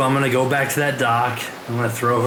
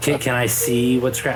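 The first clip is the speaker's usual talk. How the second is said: normal talking voice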